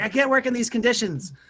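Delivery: very high, squeaky, grumpy, disgruntled halfling voice. Voicing a halfling bursting out of the kitchen: disgruntled halfling voice. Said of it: "he bursts out of there and he's like".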